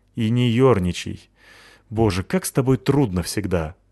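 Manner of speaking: ordinary delivery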